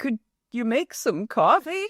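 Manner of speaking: high, sorrowful, pathetic, pitiful voice. Retelling how she asked the speaker for a favor, mock-sad Dickensian voice. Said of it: "In this saddest, terrible Dickensian voice".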